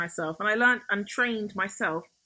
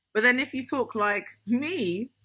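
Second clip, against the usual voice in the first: ordinary talk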